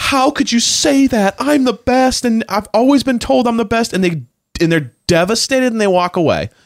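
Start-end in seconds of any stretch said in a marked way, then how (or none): 0.0-3.9 very high-pitched, blubbering, bawling wail. Speaker acts out rejected talent-show contestants, imitating someone bawling. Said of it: "they would start bawling and going".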